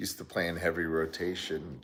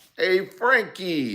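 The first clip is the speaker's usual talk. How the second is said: put-on New York accent, very high and loud; 13 semitones higher, 8 dB louder than usual. Calling out a greeting, as heard on his video, in a New York accent. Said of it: "that was me doing my New York accent".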